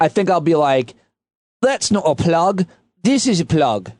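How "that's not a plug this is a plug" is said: weird, swooping, poor put-on Cockney accent. Joking about visiting Australia, trying an accent: weird Cockney accent attempt. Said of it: "I don't know what accent that was".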